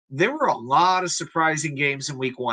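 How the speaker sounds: ordinary delivery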